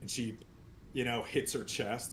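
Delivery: ordinary delivery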